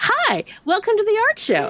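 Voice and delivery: put-on bright, chirpy sing-song, pitched way up. Retelling what the volunteer at the front said: imitating a chirpy volunteer. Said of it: "she very chirpily is like".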